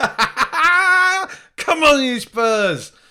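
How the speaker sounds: shouting jubilantly. Speaker shouts into the microphone as a generic football fan, jubilant football-fan shout. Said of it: "generic football fan man shouting jubilantly into the microphone".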